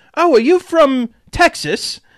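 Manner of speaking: very high, put-on British accent. Retelling a lady walking up to him and a coworker: british accent. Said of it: "in British accent".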